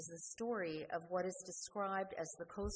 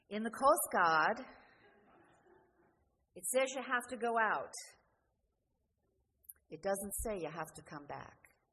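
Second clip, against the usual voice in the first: loud, laid-on put-on Boston accent; 3 semitones higher, 8 dB louder than usual. Quoting the Coast Guard rescue leader's words, in a Boston accent. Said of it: "in my best Boston accent".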